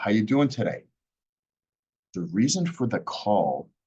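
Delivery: high on how you doing, then drops low on reason. Demonstrating the opening line of a call script: pitch high, then drops low. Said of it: "Notice how I dropped my tone after going high, I went low".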